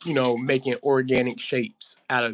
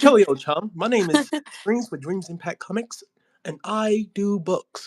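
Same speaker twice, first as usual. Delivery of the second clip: put-on British accent, pitched up; 8 semitones higher than usual. Introducing oneself to a live stream audience: attempted British accent. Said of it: "is that a good British accent".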